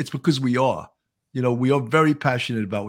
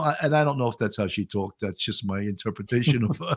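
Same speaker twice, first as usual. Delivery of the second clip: ordinary talk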